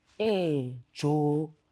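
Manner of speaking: slow drawl, every word stretched way out. Showing how slowly Midrand people speak: slow relaxed Midrand drawl. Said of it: "I've said two words. It took ten seconds".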